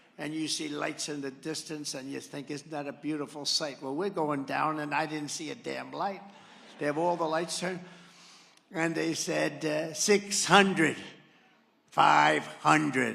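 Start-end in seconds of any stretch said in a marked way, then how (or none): 9.9-13.2 slow, raised, creaky robotic computer voice. Retelling a plane landing at Kennedy Airport, imitating a computer voice. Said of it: "a computer voice".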